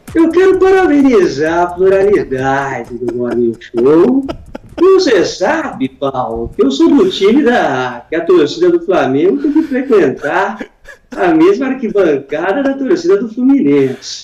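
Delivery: animated character voice with swooping pitch. Doing the Friday impression asked for by the host: Augusto Nunes impression. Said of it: "esse é o nosso Augusto Nunes do Morning Show, muito bem interpretado pelo [name]".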